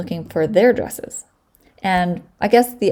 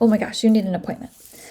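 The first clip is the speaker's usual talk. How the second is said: put-on worried voice, higher pitch; 3 semitones higher than usual. Retelling how Jody reacted to no dress appointment: imitating Jody sounding worried. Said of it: "she's all worried".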